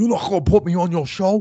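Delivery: very high-pitched, put-on New York accent. Acting out a rumored culprit's words after a delayed show, put-on New York accent. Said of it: "That's a New York accent".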